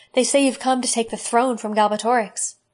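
plain

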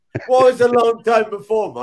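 loud, high-pitched mocking echo.

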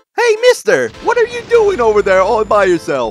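high, wildly swooping bad character voice. Reading a game character's line aloud: really shitty Mario voice. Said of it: "that sounded like a really shitty Mario".

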